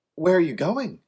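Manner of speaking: high, loud, panic-filled voice. Narrator reading a character's question to a woman dragging another away, panicked voice. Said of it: "asked with panic in his voice".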